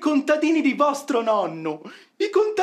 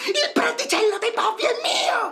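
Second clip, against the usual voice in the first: stubborn, quarrelsome, insistent tone, pitched up; 8 semitones higher than usual. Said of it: "Ma perché gridate?".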